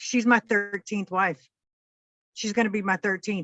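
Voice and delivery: dead serious, bone-dry deadpan, no hint of joking. Retelling a joke told to a clerk: imitating a deadpan line. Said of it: "says straight at her, dead, deadpan".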